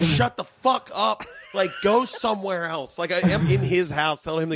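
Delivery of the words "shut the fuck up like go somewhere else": mock scream, higher pitch. Retelling telling a roommate off during recording: retelling screaming at someone. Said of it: "screaming at him".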